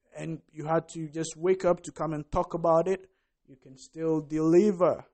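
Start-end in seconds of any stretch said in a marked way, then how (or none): none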